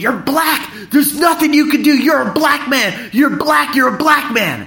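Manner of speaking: high-pitched, shouted, berating yell. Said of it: "she was berating me".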